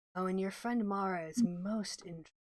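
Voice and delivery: soft, hushed half-whisper. A narrator voices a stone that half-whispers to a player's character: half-whispering. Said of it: "it whispers to you".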